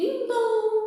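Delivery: high ding-dong chime like a doorbell. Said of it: "o barulho do, da campainha".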